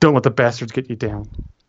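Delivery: mock hushed, quiet voice. Retelling what a man said while patting the speaker's shoulder, speaking quietly. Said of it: "he said like real quietly so nobody could hear".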